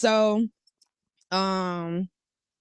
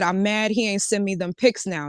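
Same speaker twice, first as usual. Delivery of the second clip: ordinary talk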